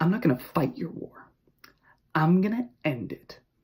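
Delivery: put-on soft, smirking, self-assured sneer. Quoting a character's line while discussing how she delivers it, imitating a confident sneer. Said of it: "you can hear this confident sneer, this smirk".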